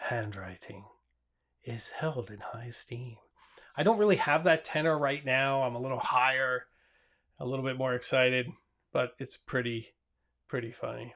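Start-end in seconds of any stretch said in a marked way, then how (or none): 0.0-3.2 very hushed, low, soft late-night radio narrator voice. Recording narration alone with a microphone and Final Cut Pro, NPR voice. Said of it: "I'm just like in N P R voice".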